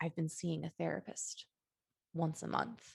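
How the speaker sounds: secretive, confiding whisper, voice dropped low. Retelling a friend leaning over at lunch to confide, imitating her hushed tone. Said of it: "in a hushed tone".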